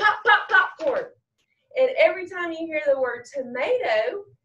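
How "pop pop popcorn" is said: shouted, pitched-up yell on pop pop popcorn. Showing children the call to yell when they hear corn: yelling pop pop popcorn. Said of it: "So this is how it goes".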